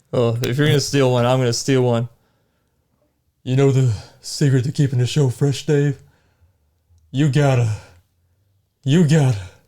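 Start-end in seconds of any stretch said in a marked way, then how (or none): 3.4-9.4 fake, breathy dying voice, like a last gasp. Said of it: "say 'em in the voice of your dying breath".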